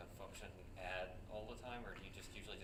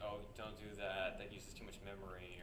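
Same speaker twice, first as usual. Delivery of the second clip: normal talking voice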